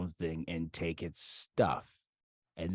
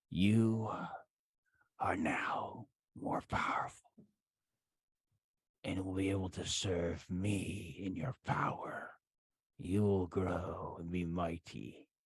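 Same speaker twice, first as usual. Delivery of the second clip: very slow, drawn-out whispered voice; 5 dB quieter than usual. Voicing a whisper heard from up the stairs: whispering voice. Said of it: "the whispering is up the stairs".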